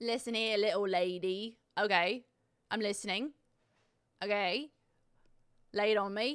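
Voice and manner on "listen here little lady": fake put-on British accent. Asked for a British accent again, the speaker obliges in a British accent. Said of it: "You want a British accent again?".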